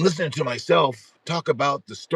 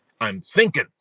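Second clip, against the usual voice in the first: put-on annoyed child voice; 4 dB louder than usual. Retelling a daughter's reply when interrupted while sucking her thumb: imitating an annoyed child. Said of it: "like she was annoyed that I was interrupting her".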